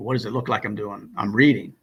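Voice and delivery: mock sarcastic tone. Retelling a gunnery sergeant's answer to a question: imitating a sarcastic retort. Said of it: "sarcastically came at me".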